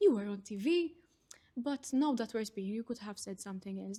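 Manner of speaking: said with pride. Retelling how family speaks after a tv appearance: imitating a proud voice. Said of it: "in such a proud voice".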